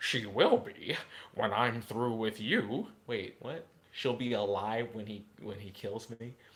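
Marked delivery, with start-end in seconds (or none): 0.0-2.9 dark, threatening, sinister frog puppet voice. Acting out a story, Kermit answers the speaker's character in a sinister Sith Kermit voice. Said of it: "I have to make it sinister".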